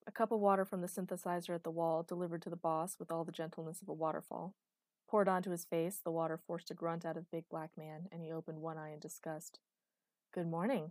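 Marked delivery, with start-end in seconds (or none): 10.3-10.9 cleanest, sweetly innocent voice. Waking the boss after pouring water on his face: cleanest, most innocent voice. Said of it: "I sang out in my cleanest, most innocent voice".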